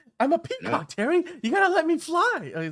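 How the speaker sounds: very high, loud, belted delivery with big swoops. Talking about a movie trailer, doing a Mark Wahlberg impression. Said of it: "that's that's Mark Wahlberg. It's that's uh that's the good impression".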